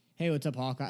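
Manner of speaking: put-on laid-back, offhand, breezy casual tone. Retelling a comic scene to another speaker: imitating Ultron being casual. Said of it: "casual to him".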